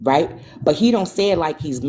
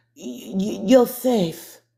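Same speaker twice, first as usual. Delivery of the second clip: put-on very slow, high, slurred stumbling words; 6 semitones higher than usual. Retelling what a sister said on the phone: imitating her slurred speech. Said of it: "like this".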